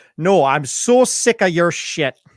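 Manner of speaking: put-on angry, slow, deliberate, drawn-out Wisconsin accent. Imitating angry people from Wisconsin: imitating an angry Wisconsin person. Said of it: "angry people from a... state perspective is people from Wisconsin".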